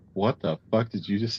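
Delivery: ordinary delivery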